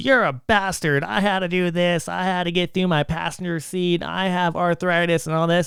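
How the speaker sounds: put-on old lady yelling. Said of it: "she's yelling at me through the window".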